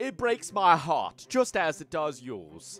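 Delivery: very slow put-on blend of southern and British accents. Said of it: "Sorry, I turned British".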